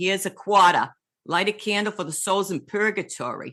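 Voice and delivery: put-on thick Boston accent, laid on heavy. Recalling her mother's words at church when she was a girl, thick Boston accent. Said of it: "in her thick Boston accent".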